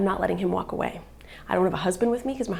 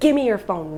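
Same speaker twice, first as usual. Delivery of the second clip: loud, forceful, aggressive and threatening; 7 dB louder than usual. Retelling holding a man by the neck and demanding his phone, retelling an aggressive demand. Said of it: "really aggressively".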